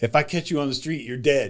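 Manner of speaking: usual speaking voice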